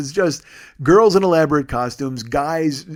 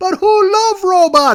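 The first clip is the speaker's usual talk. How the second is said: very high, loud, hyped-up broken English; 7 dB louder than usual. Retelling a woman hyping the crowd: imitating broken english. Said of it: "a woman comes out with broken English".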